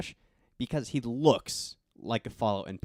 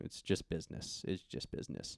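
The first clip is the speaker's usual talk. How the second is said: put-on very soft, defeated, downtrodden whispered murmur; 6 semitones lower, 11 dB quieter than usual. Recounting a character's reply at the end of a scene, retelling it downtrodden. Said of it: "in a very like downtrodden tone".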